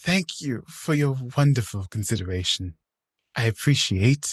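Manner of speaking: put-on politeness through gritted teeth. Recapping a scene, the speaker acts out Victoria's reply through gritted teeth. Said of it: "she's saying this with gritted teeth".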